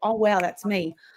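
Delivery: ordinary delivery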